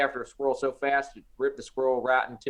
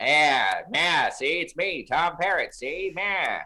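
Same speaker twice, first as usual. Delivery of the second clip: put-on old-time radio gangster voice, vintage mobster talk; 2 semitones higher than usual. Introducing himself on a seminar recording, in an old-timey radio gangster voice. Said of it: "I sound like an old timey gangster on the radio".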